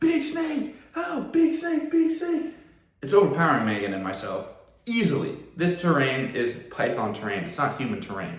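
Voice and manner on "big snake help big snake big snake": put-on high-pitched yelling. Retelling being pulled down by a big snake in the swamp, retelling a yell. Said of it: "I'm yelling".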